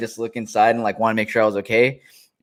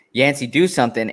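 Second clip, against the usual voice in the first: ordinary delivery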